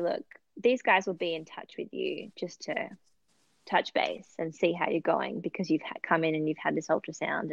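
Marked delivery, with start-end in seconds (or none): none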